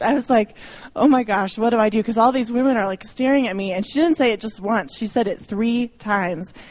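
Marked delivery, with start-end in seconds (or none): none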